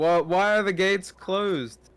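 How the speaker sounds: calling upward, mildly. The speaker's character calls to the guard on top of the wall, yelling. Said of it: "I'm yelling I'm yelling to the guard".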